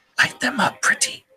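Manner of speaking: close, intimate whisper right in the ear. Game master voicing a character whispering in a player's ear, whisper. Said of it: "you hear him whisper in your ear".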